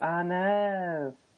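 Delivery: high put-on cartoon voice, drawn-out know. Showing off an impression of an obscure cartoon character, Family Guy character voice. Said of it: "I do a good impression of an obscure character from Family Guy".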